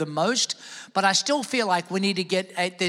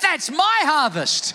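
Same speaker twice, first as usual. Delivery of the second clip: loud, high, calling-out yell. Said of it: "I think you do a lot better".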